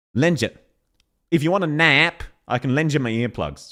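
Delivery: put-on, imperfect attempt at an Australian accent. Imitating how a voice actor says the line: imitating an attempted australian accent. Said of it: "is more how she's saying it".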